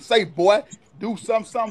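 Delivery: aggressive, confrontational, in-your-face, fight-picking tone. Acting out walking up to someone and calling them boy: aggressive. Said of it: "of aggression".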